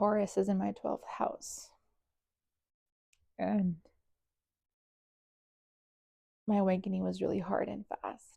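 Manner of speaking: voice holding back tears. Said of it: "Trying not to cry".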